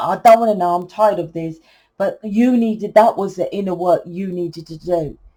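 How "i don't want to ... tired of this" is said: plain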